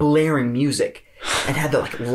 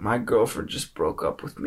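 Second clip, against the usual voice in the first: grave, solemn, low, dead-serious delivery; 4 semitones lower, 5 dB quieter than usual. Retelling a guy at the window late at night: imitating someone getting serious. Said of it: "he gets real serious".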